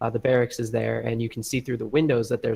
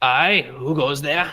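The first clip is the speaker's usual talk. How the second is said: dwarf character voice, loud; 3 semitones higher, 5 dB louder than usual. The narrator voices a guard hailing approaching travelers; dwarf guard hailing. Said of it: "One of them hails you and says".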